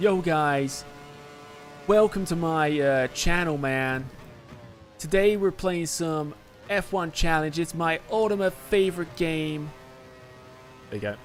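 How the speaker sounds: put-on American English accent. Doing a channel welcome intro, put-on american accent. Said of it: "Do my best American English".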